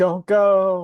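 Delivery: all-out screaming, high and loud. As two characters wrestle, the player's character calls out, screaming. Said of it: "I'm just screaming like".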